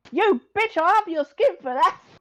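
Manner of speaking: cockney newsboy holler, very high and very loud. Pushed to say the line again but angrier, the actor tries; cockney newspaper boy calling out. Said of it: "You sound like a cockney newspaper boy".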